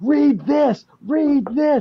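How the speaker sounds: put-on, very high, loud, drawn-out yell. Retelling how someone off stage kept handing over jokes: imitating someone yelling. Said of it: "just yelling".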